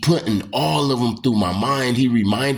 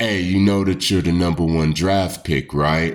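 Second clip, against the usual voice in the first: put-on deeper voice, faster; 5 semitones lower than usual. Retelling what a voice behind him said to him, imitating a deeper voice. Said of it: "his voice changed into like a deeper type of voice".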